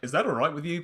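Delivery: accusing, challenging, pointed tone. Replaying one's own earlier question to show how it came across: mock accusatory tone. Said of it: "that sounded like it was an accusatory tone".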